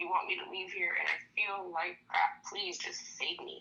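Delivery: play-acted sobbing, begging through tears. Retelling begging a doctor in a hospital bed: imitating crying and pleading. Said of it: "Snot nose and everything".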